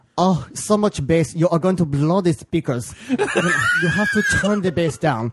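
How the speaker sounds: slow, high, mock German accent laid on thick.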